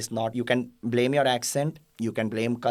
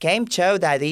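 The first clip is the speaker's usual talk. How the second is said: put-on American accent, high and loud; 7 semitones higher, 6 dB louder than usual. Mocking how Americans say a Gujarati greeting to grandmother, mock American accent. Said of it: "You know how Americans do?".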